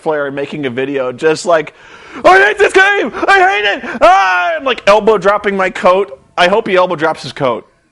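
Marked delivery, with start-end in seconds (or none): 2.2-4.6 mock frenzied, very high-pitched raging outburst. Imagining ranting like Ric Flair about a game: imitating a raging rant.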